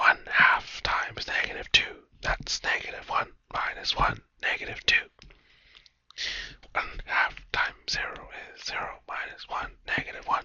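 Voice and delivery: very quiet, barely there whisper. Talking a listener through plugging x values into an equation, whispering. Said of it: "I don't know why I'm whispering".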